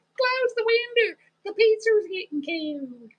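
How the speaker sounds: put-on Texas accent with very high pitch. Describing how female cousins talk, the speaker says it in a Texas accent. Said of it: "That's my Texas accent".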